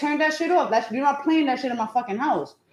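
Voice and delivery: mock furious yelling. Retelling going off at a son playing music: retelling yelling at son. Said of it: "I'll be like".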